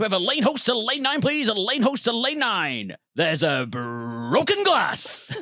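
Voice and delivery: very high, proper radio-DJ delivery. A former bowling-alley lane host quotes an announcement: proper DJ voice. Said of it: "on a proper DJ voice".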